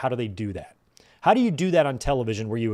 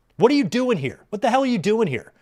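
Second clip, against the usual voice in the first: mock very high, shrill, shouting woman's voice; 9 semitones higher than usual. Retelling a scene where a lady's voice yells at Cope, imitating Beth yelling. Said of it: "you hear like a lady's voice yelling".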